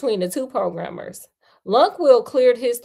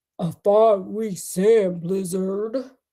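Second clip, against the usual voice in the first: haughty put-on computer voice, lower pitched; 3 semitones lower than usual. Reading a novel aloud, a computer answering haughtily: Deep Thought voice. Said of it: "we're done with the Deep Thought voice".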